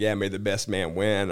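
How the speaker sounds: normal talking voice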